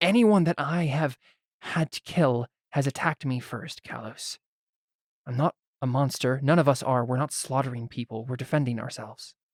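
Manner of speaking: tired delivery. Voicing a character repeating a story, too tired to argue: tired voice in character. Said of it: "she seems too tired to argue with you".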